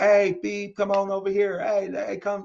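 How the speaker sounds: put-on, rude, drawn-out, high hollered yell. Retelling how the guys sitting nearby called out to a woman, retelling men yelling. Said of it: "they start yelling at her like".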